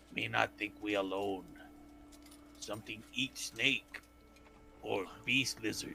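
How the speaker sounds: hushed, quiet whisper. In character, telling the others in a low voice. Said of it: "I tell them in a low voice".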